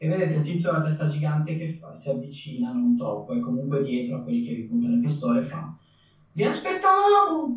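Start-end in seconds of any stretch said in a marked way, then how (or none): 6.3-7.6 very high squeaky little voice. Narrating a giant-headed man behind the gunmen greeting the players, in a tiny squeaky voice. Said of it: "Ha veramente una vocina del genere con la testa gigante".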